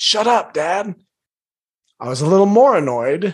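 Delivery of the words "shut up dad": put-on yell, snapped up high, kept small. Father retells his son on the phone yelling at him: imitating son's yell. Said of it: "And he yelled at me".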